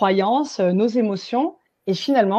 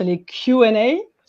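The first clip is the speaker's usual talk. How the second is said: English-accented voice; 4 dB louder than usual. Host invites viewers to post questions in the Q&A column, in an English accent. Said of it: "je vous gratifie de mon accent anglais".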